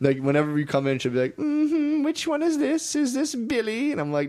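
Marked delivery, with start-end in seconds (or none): 1.4-3.9 great-aunt voice, very high-pitched, very slow and drawn out. Retelling what the great aunt says on seeing a visitor: imitating great aunt's way of talking. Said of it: "That's how she talks".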